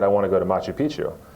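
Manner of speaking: usual speaking voice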